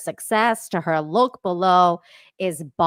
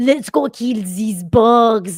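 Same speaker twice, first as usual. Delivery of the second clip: put-on heavy, thick, loud German accent; 4 semitones higher, 5 dB louder than usual. Describing a friend's german friend, in a thick german accent. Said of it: "has like the thickest German accent".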